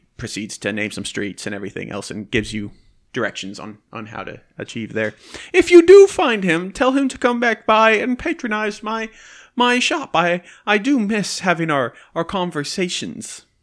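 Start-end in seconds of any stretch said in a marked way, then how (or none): 5.5-13.4 big jovial man's voice, much higher, slower. A shopkeeper character asks you to send a missing visitor back to his shop: jovial shopkeeper voice. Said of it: "he's a big old fat jovial man".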